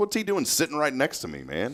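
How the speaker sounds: imitated frustrated tone. Retelling annoyance at a stranger seated beside him: imitating own frustrated thought. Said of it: "and I'm frustrated".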